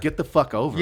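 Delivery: ordinary delivery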